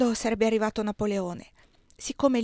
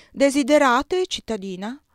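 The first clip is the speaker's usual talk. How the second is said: lofty, superior, haughty tone with raised pitch; 3 semitones higher, 5 dB louder than usual. An aristocratic servant looks the narrator up and down; haughty tone. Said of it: "domandò in tono altezzoso".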